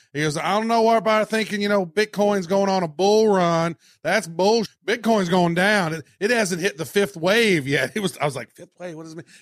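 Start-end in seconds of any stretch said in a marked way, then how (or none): 0.4-7.9 put-on, pitched-up North Carolina southern drawl. Quoting a man whose episodes you have been watching, imitating a North Carolina southern drawl. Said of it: "He's got this kind of a southern drawl".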